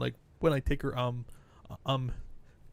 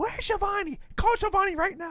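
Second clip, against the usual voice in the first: put-on screaming, pitched higher; 3 dB louder than usual. Retelling a scene from Dynamite, imitating Britt Baker screaming. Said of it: "so she's screaming".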